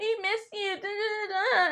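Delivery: high, annoying, silly put-on little girl voice. Act out Mary imitating Whitney's annoying little girl voice. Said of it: "Mary started imitating Whitney".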